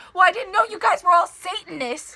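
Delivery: put-on high-pitched, heated, angry yell. Retelling a quarrel with a worker, imitating own yelling. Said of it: "And I started yelling".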